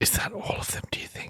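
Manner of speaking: whispering. Characters near creatures that are drawn to noise, whispering. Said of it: "Can I stop whispering now?".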